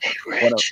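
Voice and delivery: whispered imitation voice. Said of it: "use my [name] impression and whisper".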